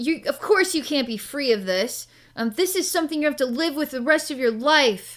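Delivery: angry bullying man voice. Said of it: "he's being a total bully".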